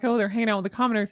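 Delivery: quick sarcastic delivery. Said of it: "I say it sarcastically".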